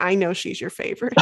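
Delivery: ordinary talk, nothing marked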